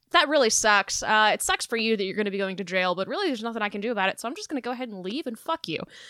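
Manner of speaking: put-on deadpan delivery. Retelling a noir story scene, speaker acts out Simon's reply, mock-deadpan as Simon. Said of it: "completely deadpan".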